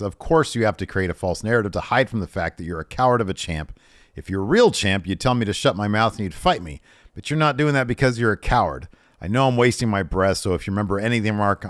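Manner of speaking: ordinary talk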